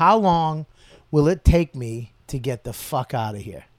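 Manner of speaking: normal talking voice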